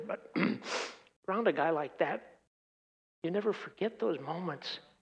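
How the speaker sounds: very quiet, emotional, moved voice. Speaker recalls being around a man god forgave, getting emotional. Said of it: "I get emotional here".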